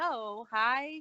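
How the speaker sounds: ordinary talk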